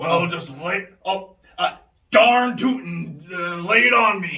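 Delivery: put-on folksy, rich investor voice. In a pitch skit, the investor replies to the pitcher: folksy rich investor voice. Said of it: "I am an investor, okay? I am just the Wolf of Wall Street. I'm looking to invest in the next big thing. But I am looking for my dream investment in order to retire at a young age of 45".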